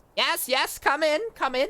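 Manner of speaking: very high, loud little gnome voice. Voicing a professor who calls from behind his office door: Professor Mortis gnomish voice. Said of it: "the voice kinda ma-, matches a gnome".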